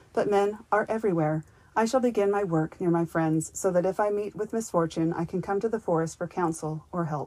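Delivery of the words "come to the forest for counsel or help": ordinary delivery, nothing marked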